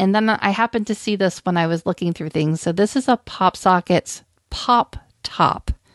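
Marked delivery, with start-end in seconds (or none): 3.2-5.7 very slow, careful, word-by-word phrasing. Naming a newly found item, said very slowly. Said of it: "I had to say that really slowly".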